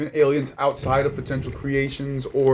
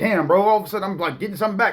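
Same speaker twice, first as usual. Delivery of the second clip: ordinary delivery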